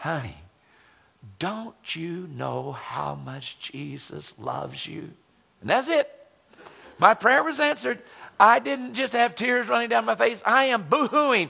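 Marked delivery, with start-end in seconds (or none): 0.0-5.1 very slow half-whisper, close to the ear. Retelling what a Sunday school teacher half-whispered in the ear: imitating Sister Imogene half-whispering. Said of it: "whispered in my ear".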